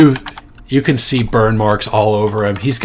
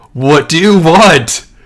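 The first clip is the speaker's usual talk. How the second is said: loud, high-pitched shouted yell; 7 semitones higher, 6 dB louder than usual. Voicing a creature on a bridge calling out to the party: yelling. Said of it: "he's yelling out to you in common".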